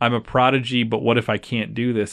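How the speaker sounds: normal talking voice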